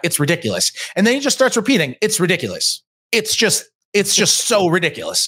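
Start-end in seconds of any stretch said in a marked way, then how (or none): 2.0-5.3 baffled, incredulous disbelief. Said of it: "saying it the way that".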